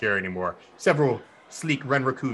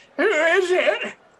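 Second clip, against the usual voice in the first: put-on old lady voice, spoken much slower; 6 dB louder than usual. Going to the door and answering a knock as Granny: Granny impression. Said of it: "do my best Granny impression with my voice changing".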